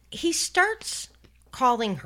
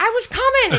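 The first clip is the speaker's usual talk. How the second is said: very high, loud mock voice, pitched way up. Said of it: "and you're like".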